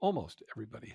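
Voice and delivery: sarcastic delivery.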